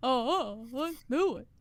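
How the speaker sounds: stretched out, big and slow. Agreeing to put ten minutes on the clock: sounding like Yogi Bear. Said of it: "You sound like Yogi Bear".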